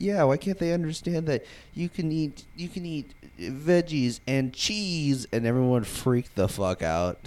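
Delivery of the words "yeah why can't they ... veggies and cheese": high, slow cartoon girl voice impression. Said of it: "she was like".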